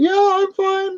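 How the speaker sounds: tiny, very high-pitched squeaky voice. Retelling how she answered when asked if she felt okay, in a high-pitched squeaky voice. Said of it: "High, high pitched, squeaky voice".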